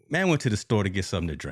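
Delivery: ordinary delivery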